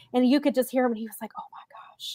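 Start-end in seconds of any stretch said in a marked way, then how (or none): 1.4-2.2 stunned, awed whisper under the breath, barely audible. Retelling a commentator's reaction to a wrestler lifting someone: imitating Adam Cole's whisper. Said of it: "he kinda whispered it".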